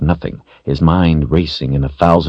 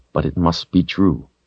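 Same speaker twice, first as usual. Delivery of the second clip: ordinary delivery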